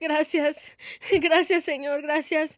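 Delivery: weepy voice, crying through the words. Retelling thanking a man who killed a cockroach, acting out crying thanks. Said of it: "And I'm crying and I'm just like".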